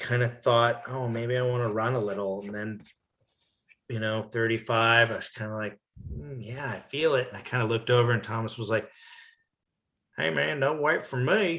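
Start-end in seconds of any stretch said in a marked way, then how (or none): 10.2-11.6 put-on Texan-accented speech. Recalling a run, the speaker quotes Thomas urging him on, in Thomas's Texas accent.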